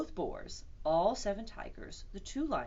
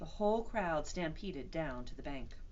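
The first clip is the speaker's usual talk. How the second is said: ordinary delivery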